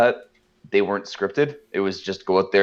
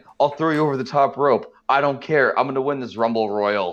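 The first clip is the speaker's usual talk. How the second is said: put-on ranting wrestler voice, pitched higher; 5 semitones higher than usual. Retelling what a wrestler says before the Royal Rumble: imitating Hercules. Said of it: "you gotta hear what Hercules says".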